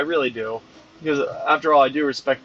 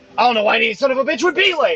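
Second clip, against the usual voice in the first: mock very high-pitched, shrill scolding yell; 10 semitones higher than usual. Recounting being pulled aside for lateness, speaker quotes the man; retelling a yell. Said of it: "starts yelling at me for being late".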